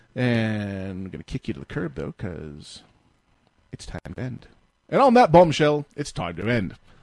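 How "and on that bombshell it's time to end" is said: really bad put-on voice, loud, raised, swinging pitch. Ending the show in a really bad Jeremy Clarkson impression. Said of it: "my really bad Jeremy Clarkson".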